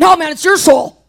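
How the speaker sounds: mock-aggressive joking tone. Retelling a woman's retort to his comment, mock-aggressive joking retort. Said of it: "She jokingly, but kind of like a little bit aggressively said".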